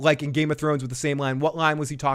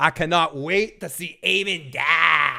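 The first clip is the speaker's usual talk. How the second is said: intense, very slow, "die" drawn out. Reading a chat message aloud with added intensity: intense voice. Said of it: "That was my intensity voice".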